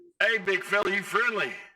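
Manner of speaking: loud, high, friendly yell. Playing a character leaning out a window to yell at a giant: yelling in character. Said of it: "yell at".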